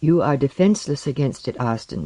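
ordinary talk

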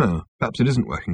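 ordinary delivery

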